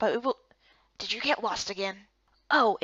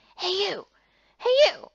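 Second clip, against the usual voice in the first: put-on overdone, loud, too-high boy character voice; 9 semitones higher, 5 dB louder than usual. Trying out voices for a character before asking Dad for advice: too-high character voice. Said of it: "not that high".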